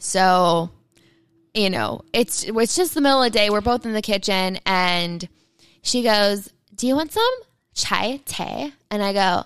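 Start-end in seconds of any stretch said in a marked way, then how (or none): 6.7-8.7 put-on high, very irritating valley girl voice. Retelling what she asks in the kitchen, annoying valley girl voice. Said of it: "our most annoying valley girl voice".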